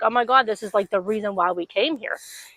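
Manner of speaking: imitated angry, mad tone. Retelling a ride that turned out to be closed: retelling being mad. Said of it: "We were so mad".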